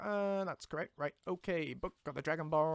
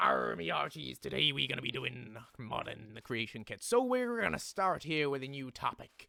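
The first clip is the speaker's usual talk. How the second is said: put-on pirate voice; 2 semitones lower than usual. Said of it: "modding while talking like a pirate".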